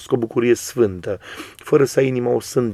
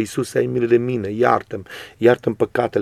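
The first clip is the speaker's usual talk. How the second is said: plain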